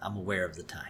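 hushed, very quiet, low voice. Retelling a story, quoting a character's reply to her aunt, very quietly. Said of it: "Lisa says very quietly".

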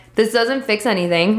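ordinary talk, nothing marked

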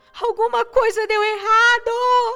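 drawn-out panicked scream, very loud, high. Trapped under a lid that will not open, screaming. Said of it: "Eu gritei".

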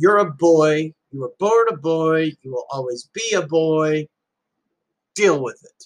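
mock bellow at the top of voice, as across distance. Retelling what a biker yelled from three hundred feet away: imitating someone shouting. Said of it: "he says at the top of his voice".

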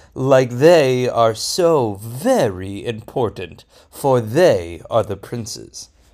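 lofty, stuck-up, snooty haughty voice. Storyteller voicing the Nisi'im princes in a story, snooty princes' voice. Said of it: "I give them kind of a snooty voice like this".

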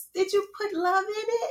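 put-on very high, tiny, small little-girl voice. Retelling what the speaker's oldest daughter would ask during cooking, imitating her little voice. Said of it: "with her little voice".

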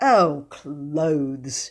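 contemptuous. Corrected about which things to pack, the speaker answers, scornful.

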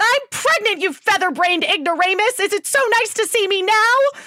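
very high, shrill, loud, sudden insulting blurt. A woman tells her lover she is pregnant, blurting it out. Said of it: "she simply blurted out".

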